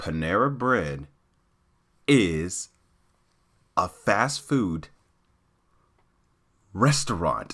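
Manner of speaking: very slow, low, halting, word-by-word delivery. Answering online commenters to make it perfectly clear, as slow as possible. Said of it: "I'm going to say this as slow as possible".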